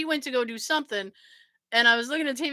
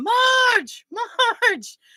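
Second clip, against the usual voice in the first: put-on very high, loud calling yell; 11 semitones higher, 5 dB louder than usual. Recounting an episode where Marge runs away, a speaker acts out Homer; imitating Homer yelling. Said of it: "he's yelling".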